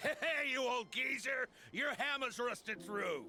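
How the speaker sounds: shouting. Insulting another character in a quarrel, yelling. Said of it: "You're yelling".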